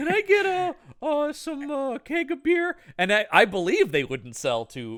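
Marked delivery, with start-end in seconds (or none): 0.0-2.8 very high, slow, tiny, meek Canadian voice. Retelling a movie scene of ordering beer: imitating a tiny little canadian guy. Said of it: "he's this tiny little Canadian guy going".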